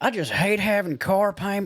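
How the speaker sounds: high-pitched, put-on country accent.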